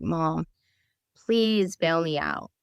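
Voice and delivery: put-on tearful, crying, pleading voice. Retelling a call to mom from jail, imitating own crying plea. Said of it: "I call my mom and I'm crying my eyes out".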